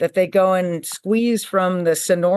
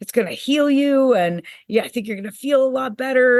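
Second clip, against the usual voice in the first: put-on, all-excited, eager voice; 5 semitones higher than usual. Retelling a phone call where he urged trying it: imitating someone excited. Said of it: "he was all excited".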